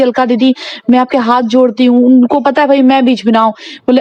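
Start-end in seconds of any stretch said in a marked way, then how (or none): none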